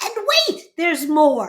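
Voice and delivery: very loud, booming, swooping infomercial host voice. Describing a late-night knife commercial, imitating the host in a really loud voice. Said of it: "the host in a really loud voice will go".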